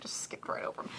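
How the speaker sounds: hushed whisper, like telling a secret.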